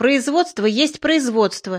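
ordinary delivery, nothing marked

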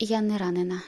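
usual speaking voice

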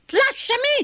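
very high, shrill shout. Reading a fable aloud, the narrator gives the rabbit's line to the tar doll, shouted. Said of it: "gridò Coniglio".

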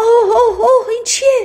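startled, frightened shriek of terror, very high. A woman sees a sausage crawling toward her from the chimney, frightened scream. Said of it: "زن ترسید و فریاد کشید".

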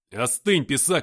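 loud, barked, sharp delivery. The narrator cuts off a man shouting threats, barking the line. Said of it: "рявкнул я".

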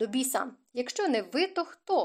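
ordinary talk

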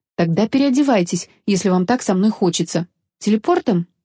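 ordinary delivery, nothing marked

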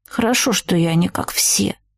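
grumbled words. The narrator answers Herbert's complaint before getting into the car, grumbled. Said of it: "буркнула я".

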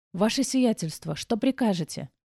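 quiet, soft, hushed. Looking at the narrator, a man asks her a question, quietly. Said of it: "тихо спросил Бертон".

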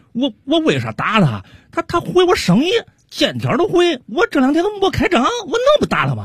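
high-pitched, agitated, wound-up, worked-up complaining voice.

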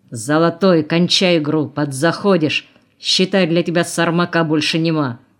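stern, strict, firm and severe tone. A man at a card game warns a tattooed young player, sternly. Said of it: "Строго предупредил".

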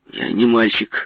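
short, clipped snap. The narrator answers an older man's question, snapping curtly. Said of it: "отрезал я".

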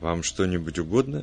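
usual speaking voice

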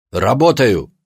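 sharp, snapped retort. Abdulla answers the woman who asked if he's amusing himself, snapped. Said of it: "огрызнулся он".

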